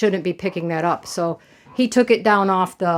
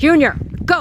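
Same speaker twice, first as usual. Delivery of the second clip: voice pitched up; 8 semitones higher than usual. Making a duck go to bed first, yelling at the duck. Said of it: "Sorry for yelling".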